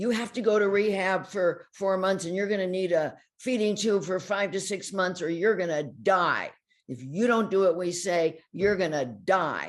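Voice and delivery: put-on loud, high, insistent screaming rant. Retelling what a hospital doctor said to a patient: imitating a doctor screaming. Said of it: "started screaming at her and saying".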